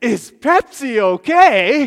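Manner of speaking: very loud, big theatrical delivery with drawn-out "okay". Speaker retells echoing the waitress's question back at her, in a loud, dramatic voice. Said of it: "in a loud, dramatic voice".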